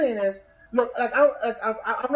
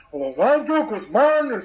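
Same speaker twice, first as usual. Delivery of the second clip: put-on newscaster pronunciation; 4 dB louder than usual. Teasing co-host Louis about how he says his own name, imitating Louis's newscaster pronunciation. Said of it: "you sound like the guy from 60 Minutes".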